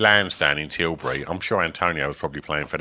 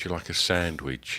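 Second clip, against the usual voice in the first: put-on, very serious woman's voice, much quieter; 9 dB quieter than usual. Retelling a woman offering a sandwich, imitating a very serious woman. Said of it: "She was really serious".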